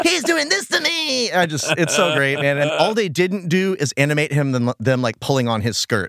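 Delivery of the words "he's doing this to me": very high, creaky, put-on kid voice. Comparing the henchmen to kids, imitating a child calling Mom. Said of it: "it's like they're his children".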